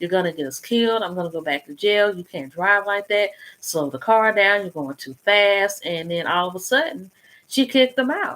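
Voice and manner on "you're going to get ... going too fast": usual speaking voice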